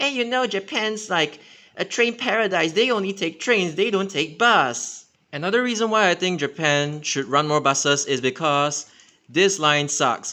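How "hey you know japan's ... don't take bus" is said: mocking know-it-all put-on voice, high. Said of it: "whatever people are saying".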